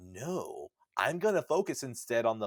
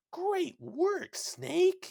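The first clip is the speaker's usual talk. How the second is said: mock, eager, excited cheer, very high pitch. Reviewing video game dialogue, doing an excited Otacon impression. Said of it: "Otacon sounds like he's excited".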